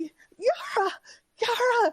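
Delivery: very high, shrill, breathless gasping scream. Voicing a panicked character running out of a tent: screaming, barely catching breath. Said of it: "And she's screaming".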